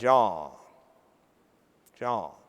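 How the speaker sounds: heavy Georgia Southern drawl, very low and deep. Speaker recalls asking Jimmy why his bank succeeds; imitating Jimmy's Southern drawl. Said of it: "In his strong Southern drawl".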